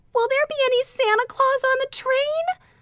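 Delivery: put-on very high, teary, tearful little-girl voice. Narrating a small sister's question before her aunt answers, tearful little girl. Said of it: "demanded his small sister tearfully".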